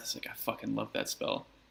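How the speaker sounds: muttered under the breath. Voicing a character reacting to a spell: muttering under his breath. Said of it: "Gin says under his breath".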